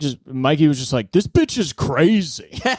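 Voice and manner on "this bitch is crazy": light, toned-down yelling. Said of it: "loudly just, just talking about anything".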